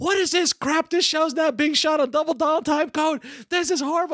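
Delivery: play-acted scream at full volume, very high, shrill. Retelling how she yelled at people on set: imitating someone yelling loudly. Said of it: "yelling at the top of her lungs".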